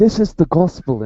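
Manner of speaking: slow, epic-sounding, put-on Scottish accent. Quoting a speaker the group admires: imitating a scottish accent. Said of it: "in his Scottish accent".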